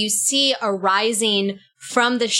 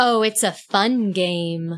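creepy, eerie, echoey voice. Game master voicing an unseen figure answering a player, creepy, echoey voice. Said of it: "but it's also really creepy and echoey".

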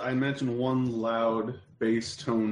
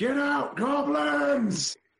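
very high-pitched yelled shout; 14 semitones higher than usual. A tabletop player's character raises his bow, shouting at goblins. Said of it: "raises his bow and shouts".

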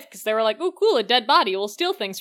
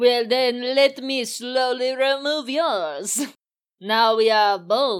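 odd, hammed-up, bad put-on French accent. Acting out a fencing scene being described, in a strange put-on voice. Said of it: "what is this voice?".

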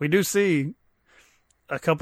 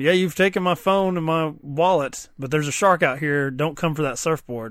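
ordinary talk, nothing marked

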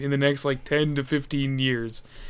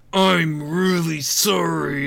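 put-on speaking through gritted teeth, much slower; 2 semitones higher than usual. Retelling how a woman apologized to another woman: imitating gritted-teeth apology. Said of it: "like gritting through her teeth".

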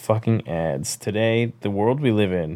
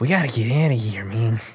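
failed, bad put-on Spanish accent; 3 semitones higher than usual. Retelling characters trying to get off a boat: put-on character voice.

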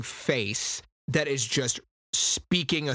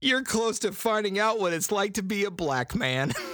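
pitched-up voice, stifling laughter, barely keeping a straight face; 6 semitones higher than usual. Retelling what a man said, trying not to laugh. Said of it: "I can't say it with a straight face".

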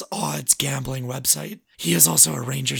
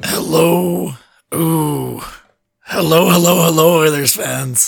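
hoarse voice, louder; 10 dB louder than usual. Greeting the listeners at the start of the podcast: raspy voice. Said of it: "That voice is so raspy".

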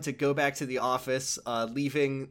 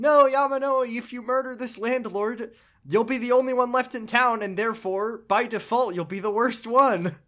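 much higher, loud, earnest pleading. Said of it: "she says".

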